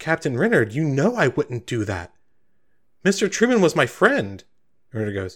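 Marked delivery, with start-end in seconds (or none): 0.0-4.4 indignant, wounded, offended, pitched up. Voicing a character whose captain asks to see her weapon: very offended. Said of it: "Sabine just looks very offended".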